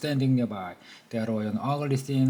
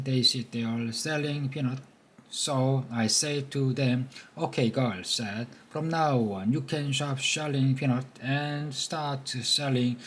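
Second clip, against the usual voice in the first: ordinary delivery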